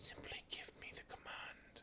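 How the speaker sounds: put-on whisper. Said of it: "a voice that you swear you heard somebody just whisper over your shoulder".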